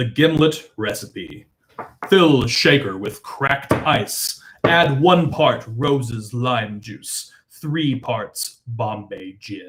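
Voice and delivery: very deep put-on voice. Reading a gimlet recipe aloud when asked: James Earl Jones voice. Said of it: "please read like James Earl Jones".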